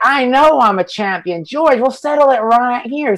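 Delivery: put-on Southern accent, pitched high. Retelling how the fighter talked on the mic: Hendricks impression. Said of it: "talk like this".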